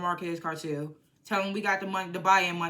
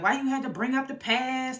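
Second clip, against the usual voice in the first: high, screamed, accusing tone; 6 semitones higher than usual. Retelling a TV scene where Tommy screams at her: imitating Tommy screaming. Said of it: "Tommy starts screaming at her".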